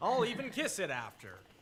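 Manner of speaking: sarcastic tone with wide pitch swings.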